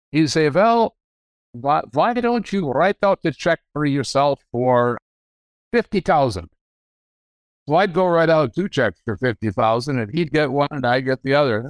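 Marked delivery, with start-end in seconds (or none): 0.5-6.5 put-on broad Dutch accent. Speaker quotes what a man would say in his office each December: Dutch accent. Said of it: "in his Dutch brogue".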